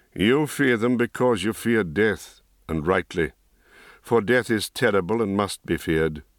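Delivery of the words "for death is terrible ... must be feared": plain reading voice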